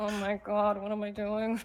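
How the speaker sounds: low mutter, under the breath. Sidling up to a fellow character mid-game, saying it under the breath. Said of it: "under my breath".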